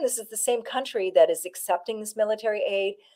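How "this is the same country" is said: plain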